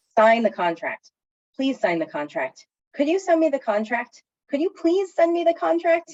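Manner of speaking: pitch climbing each phrase. Demonstrating how a request can be made nicer, pitch rising each time. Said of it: "you can hear how I'm raising my voice each time".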